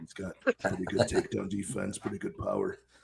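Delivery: put-on deep bass voice. Imitating a co-host giving a fight breakdown: imitating Carson's deep bass voice. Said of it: "you do a good impression of him".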